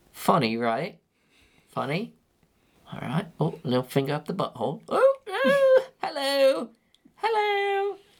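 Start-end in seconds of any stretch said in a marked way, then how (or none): 4.9-7.9 very high, swooping comic voice. Showing another speaker a Mister Bean impression. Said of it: "Here comes my Mister Bean impression".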